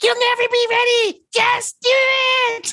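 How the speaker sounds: slow, high, stretched-out pipsqueak voice. Retelling a scene, Barley urges Ian to merge: Barley's little pipsqueak voice. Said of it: "with his like little pipsqueak voice".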